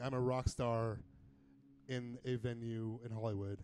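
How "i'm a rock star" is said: usual speaking voice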